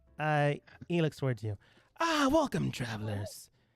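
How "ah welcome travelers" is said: slithery, raspy, snake-like character voice. Voicing a snake-like man greeting travelers, in a raspy, snake-like voice. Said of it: "in a raspy-ish voice".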